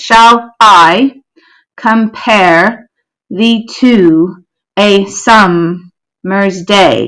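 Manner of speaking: slow, heavy iambic beat, every second syllable stressed. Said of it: "we wouldn't read it like that".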